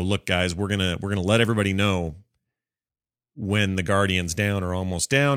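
ordinary talk

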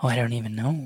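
soft, sincere, genuinely concerned and worried tone. Asked how many they have right now, the speaker answers genuinely concerned. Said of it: "You sound like you were like almost concerned for yourself".

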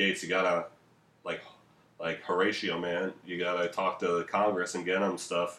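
ordinary delivery

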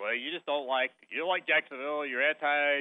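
ordinary talk, nothing marked

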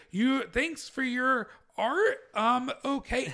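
acted awkward manner. Showing how the character could have been played instead: acting awkward. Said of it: "for her to be, like, awkward".

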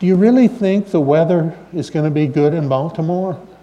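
put-on weak trembling voice. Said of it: "in a terrible, weak, trembling voice".

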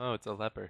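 soft, private mumble under the breath. Describing a cloaked figure to the group, mumbling to self. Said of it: "I'm just gonna mumble to myself".

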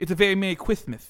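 very loud, high voice lisping each s. Naming a Christmas punch drink in a Mike Tyson lisp impression. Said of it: "make fun of people with a lisp".

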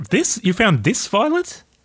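surprised, astonished, very high and swooping voice. Someone has just told you they found this very violent; question them, surprised. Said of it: "Why are you sounding so surprised?".

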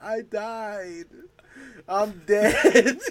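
very slow, high, loud blubbering, "died" stretched out. Retelling a TV scene where Terry cries on the sidewalk: imitating Terry crying. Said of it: "crying on the sidewalk".

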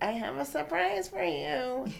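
put-on high, creaky special voice. Retelling a text she sent: imitating her voice. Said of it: "Did she text in the voice like that?".

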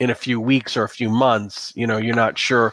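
plain reading voice

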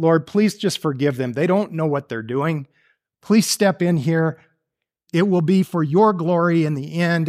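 normal talking voice

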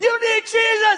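shrill, very high-pitched yelled shout. Retelling a beach encounter, yelling at the other man: retelling own yelling. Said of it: "And I'm yelling".

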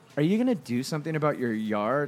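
mock faux-polite, needling, pointed, passive-aggressive tone. Retelling a lady filming someone's yard: imitating a passive-aggressive tone. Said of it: "all passive aggressively".

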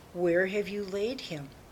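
ordinary delivery

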